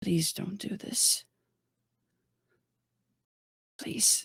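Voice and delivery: hushed, low-voiced whisper. On the ocean, Izzy walks closer with a hand outstretched, in a low voice. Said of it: "she still says in like a low a lower voice".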